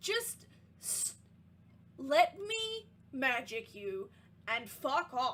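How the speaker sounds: grumpy, irritable voice. Voicing a voice heard in a character's head: grumpy voice. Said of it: "a grumpy voice in your head".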